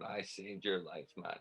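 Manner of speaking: soft, hushed half-whisper under the breath. Retelling a father's words after breaking up a fight: imitating a half-whisper. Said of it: "he whispered".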